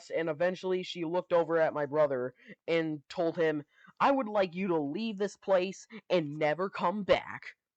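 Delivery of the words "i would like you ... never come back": put-on ticked-off, angry, irritated, commanding tone. Retelling a lady ordering a brother to leave: imitating an angry woman. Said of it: "she was getting so ticked off at us".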